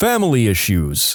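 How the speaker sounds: ordinary delivery, nothing marked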